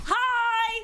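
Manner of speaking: put-on very high, loud yell in a child's voice.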